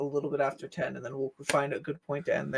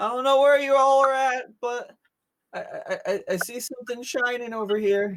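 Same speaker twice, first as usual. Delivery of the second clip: shouting at a much higher pitch; 9 semitones higher, 3 dB louder than usual. Paul, controlled by the DM, calls out to the others; Paul shouting out. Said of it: "he just shouts out".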